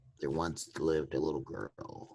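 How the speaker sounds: eerie, creepy, breathy ghost-story whisper. Starting to tell the others a story: creepy voice. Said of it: "in that creepy ass voice".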